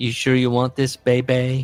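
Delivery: put-on voice with a lisp. Retelling what Dusty Rhodes asked at the basketball game in the driveway, in a lisping Dusty Rhodes voice. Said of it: "Dusty asked through his familiar lisp".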